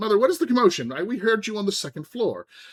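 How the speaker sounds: very high-pitched, very loud calling out. Voicing a woman bursting into a room: very loud. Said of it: "she's very loudly".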